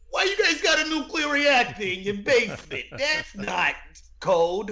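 put-on very high, old-school New York working-man accent. Quoting the pretend road workers from a movie, Ghostbusters construction worker voice. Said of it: "It's the guys from Ghostbusters".

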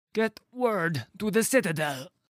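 gasped out, very high. With his last strength, a fallen man urges his companions on, gasping. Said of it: "he gasped".

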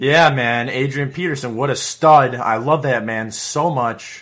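gushing sarcastic tone. Praising a running back who took playing time, sarcastic. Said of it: "Sarcastic right there. That's all sarcasm".

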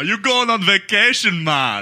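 put-on relaxed, easy Jamaican patois accent. Acting out a 4 a.m. airport ride, playing the Jamaican Uber driver: Jamaican accent. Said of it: "play the role of my Jamaican Uber driver".

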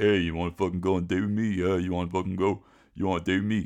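mock pushy come-on, laid on thick. Speaker acting out how Rocky came on to a shy woman, imitating Rocky's over-the-top come-on. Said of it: "He's laying it on a bit thick".

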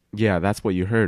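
ordinary delivery

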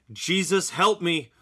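high screaming. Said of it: "and I screamed".

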